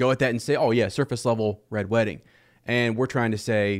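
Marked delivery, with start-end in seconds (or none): none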